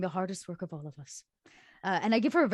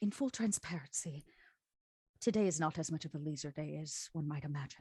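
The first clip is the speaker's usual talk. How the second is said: muttered under the breath, much quieter, lower; 3 semitones lower, 8 dB quieter than usual. Speaker retelling what they said while passing things out, under the breath. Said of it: "very under my breath, I kind of say".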